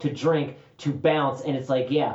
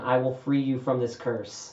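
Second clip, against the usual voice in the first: acted-out mock whispering. Acting out what will be whispered to a dog: acting out a whisper. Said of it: "I'm gonna whisper to him".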